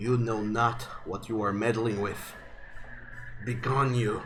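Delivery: very raspy, hoarse, hushed, rasping monster voice. Game narrator voicing a creature turning to eye two characters: very raspy voice. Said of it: "says in a very raspy voice".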